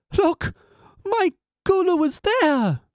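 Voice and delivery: very high, slow, drawn-out cry. Narrator reads a mother spotting her son on a bridge, crying out. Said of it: "Gulu's mother cried out".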